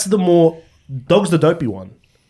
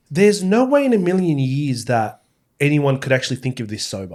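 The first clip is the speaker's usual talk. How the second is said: ordinary talk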